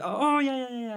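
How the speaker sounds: blurted out high-pitched and flustered.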